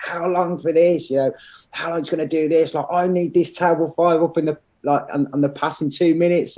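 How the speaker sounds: high, screaming head-chef voice. Retelling a head chef demanding a table's food: imitating a screaming head chef. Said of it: "screaming at me".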